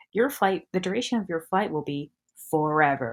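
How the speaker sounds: put-on serious, deadpan voice. Retelling a movie's joke announcement about the flight: deadpan serious Conan voice. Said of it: "the deadpan seriousness of Conan's voice".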